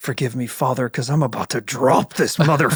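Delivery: low mutter under the breath, kept quiet. Acting out a character's prayer before attacking, muttered under the breath. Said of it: "Under my breath".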